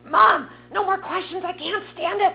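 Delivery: loud, high-pitched screaming.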